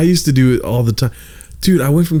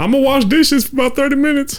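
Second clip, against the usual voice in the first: very high-pitched put-on voice; 13 semitones higher than usual. Retelling talking to coworkers in the back: Eddie Murphy voice. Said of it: "talking to the people in the back doing the Eddie Murphy voice".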